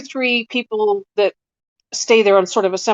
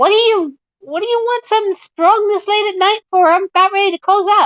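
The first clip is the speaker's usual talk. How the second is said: put-on older goblin voice, very high-pitched; 11 semitones higher than usual. Voicing a goblin behind the counter answering a late customer: older goblin man voice. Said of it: "older goblin man ... He looks up at you and says".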